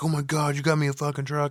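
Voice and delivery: put-on excited freakout voice. Retelling a movie scene where Jimmy gets a truck: imitating someone freaking out. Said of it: "Jimmy's freaking out like".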